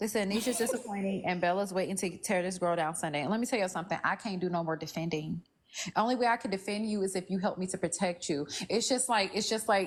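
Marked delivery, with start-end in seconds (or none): none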